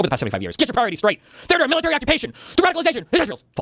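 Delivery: cartoonish angry rage voice pitched very high. Reading someone's old tweets aloud, in a mock-angry cartoonish voice. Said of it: "reads old tweets of mine ... in a cartoonish, angry voice".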